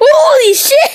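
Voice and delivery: high, loud, startled shout.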